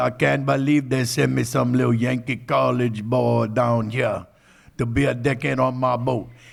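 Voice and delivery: put-on dead-on rough, loud old boat captain voice. Retelling what the seventy-seven-year-old captain said about his new deckhand: imitating the boat captain. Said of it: "That's how he talk like that".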